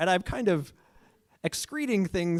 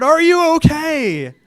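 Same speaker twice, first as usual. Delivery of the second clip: very loud, high shout, okay stretched out; 9 semitones higher, 13 dB louder than usual. Getting up after a bike fall to check on his girlfriend: retelling a shout. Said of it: "I get up and I shout".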